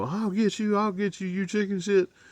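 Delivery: play-acted, very high, enraged, shrill screaming. Retelling a scene where Bug, left tied up, yells at Buck, retelling a furious scream. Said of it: "starts screaming at him".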